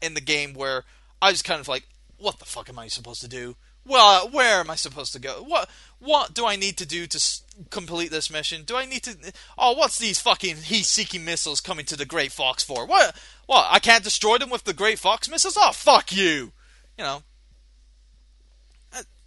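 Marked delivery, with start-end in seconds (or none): 2.2-16.5 put-on loud, exasperated, baffled and fed-up venting outburst. Retelling own thoughts while stuck on a game mission: imitating own loud frustrated rant. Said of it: "I'm sorry I'm being too, you know, um, vocal tonight".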